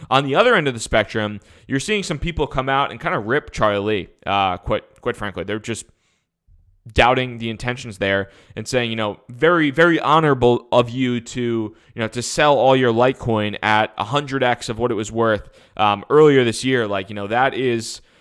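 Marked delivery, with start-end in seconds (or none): none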